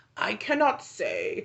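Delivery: put-on creepy, raspy old man voice. Reading Ralph's answer aloud: creepy raspy Ralph voice. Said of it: "I'm going to do a creepy old man raspy voice".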